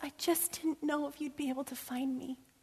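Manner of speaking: very feeble, weak, soft, high little voice. Retelling a girl's words as her daddy scooped her up, retelling in a feeble voice. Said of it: "said in a very feeble voice".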